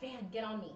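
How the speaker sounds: whispering. Speaking in character to a companion named Fan, whispering. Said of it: "I don't yell, I whisper".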